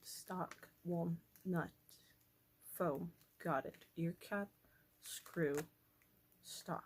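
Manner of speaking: very slow, soft, careful reading aloud. Speaker reads parts from an assembly diagram aloud, reading very slowly. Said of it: "I just have to read stuff very slowly".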